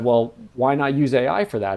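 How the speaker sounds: ordinary delivery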